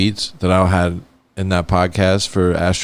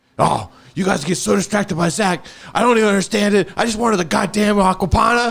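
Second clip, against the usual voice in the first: mock, very high, shrill storming rant, yelling; 13 semitones higher than usual. Retelling how someone stormed in and yelled: imitating someone yelling. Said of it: "starts yelling".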